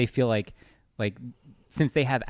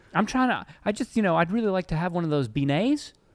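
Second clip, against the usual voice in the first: put-on, pitched-up Midwestern accent; 7 semitones higher than usual. Playing a visitor asking the way to Bourbon Street, the speaker talks in a Midwestern accent. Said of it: "do like a Midwestern accent?".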